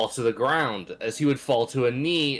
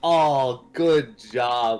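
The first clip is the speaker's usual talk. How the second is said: mock condescending, patronizing, falsely proud pat-on-the-head tone; 4 dB louder than usual. Acting out a character's look of praise: mock patronizing praise. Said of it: "Like that fucking proud parent, but it's so fucking patronizing".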